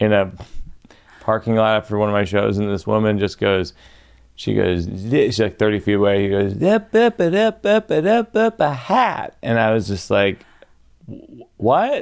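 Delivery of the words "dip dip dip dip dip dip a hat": put-on American Southern accent, much higher, slower. Comedian retelling what a woman called out across a parking lot, put-on southern accent. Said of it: "American Southern accent".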